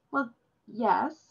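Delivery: reluctant, grudging, unwilling tone. Narrator reading a girl answering a woman's gentle question, admitting reluctantly. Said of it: "the demon girl admitted reluctantly".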